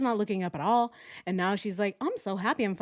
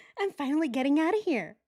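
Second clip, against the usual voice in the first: mimicked smiling, happy tone, pitched higher; 6 semitones higher than usual. Reacting to a video and voicing the woman's thoughts: imitating her smiling voice. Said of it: "She is so smiley right now. She's like".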